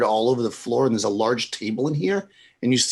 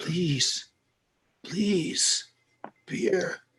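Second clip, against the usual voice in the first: put-on elderly woman voice, higher and quieter; 5 semitones higher, 7 dB quieter than usual. Voicing a very old woman in a cage begging for beer: very old woman voice. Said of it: "a very old woman".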